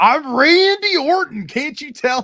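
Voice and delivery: mock very high, slow, drawn-out, exasperated, angry shout. Retelling a prank call where the callee was confused: imitating himself getting mad. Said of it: "I kept getting mad".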